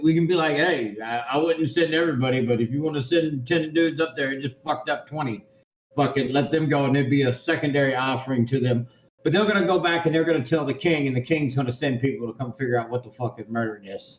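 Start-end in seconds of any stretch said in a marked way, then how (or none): none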